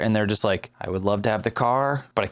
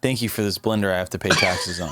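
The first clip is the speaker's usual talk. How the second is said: plain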